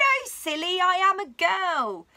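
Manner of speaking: high, giggly, very slow and drawn out. A little girl answers a little green dinosaur who greeted her, giggling. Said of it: "Emily giggled and she replied".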